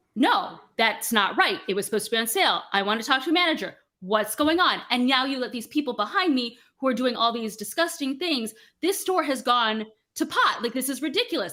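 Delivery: acted, irate, furious, escalating rant. Voicing a customer arguing with a cashier over a sale price: irate customer demanding a manager. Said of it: "getting more and more and more irate".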